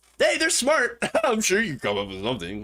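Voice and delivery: patronizing, condescending, sing-song talking-down voice. Imagining how she would say it, mock-condescending. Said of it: "with some condescension in her voice".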